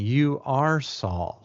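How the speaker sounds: heavy, hard stress on the word "are". Reading a passage where the text italicizes are, stress on are. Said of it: "I'm emphasizing "are"".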